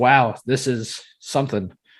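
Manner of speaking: plain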